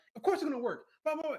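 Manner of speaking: angry, insistent, worked-up delivery. Retelling a character's reply to another character: imitating someone getting mad. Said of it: "she got all mad".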